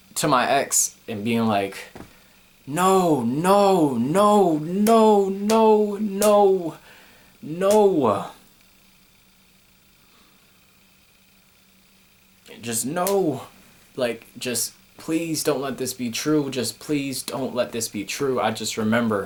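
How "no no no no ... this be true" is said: mock, high, panicked, desperate, long stretched "no". Recalling pleading with an ex when the news hit: retelling a screaming plea. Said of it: "screaming and and pleading and yelling".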